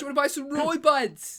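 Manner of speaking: put-on Birmingham accent with street-seller patter. Playing someone trying to sell Ray-Bans, in a Brummie accent. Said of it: "someone with a Brummie accent trying to sell".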